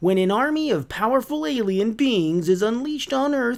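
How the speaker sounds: very high, big, dramatic promo-announcer voice. Reading a Power Rangers blurb aloud in the Nickelodeon announcer voice. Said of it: "I'll do the Nickelodeon announcer voice".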